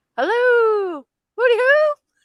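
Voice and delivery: squealed very high and loud. Retelling a sound clip, quoting Mrs. Doubtfire: Mrs. Doubtfire voice. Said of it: "Missus Doubtfire when she goes".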